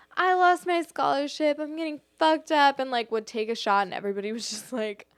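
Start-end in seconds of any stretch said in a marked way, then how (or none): 0.1-2.7 put-on miserable, sloppy, high, drunken shouting. Retelling what a drunk girl kept shouting at prom, imitating a drunk girl shouting. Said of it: "she kept shouting like".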